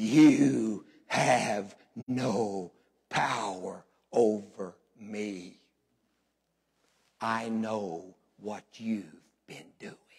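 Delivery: low gravelly gruff voice. Retelling what the voice inside a woman said to a praying pastor, low gravelly gruff voice. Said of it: "from way down low and gravelly and gruff".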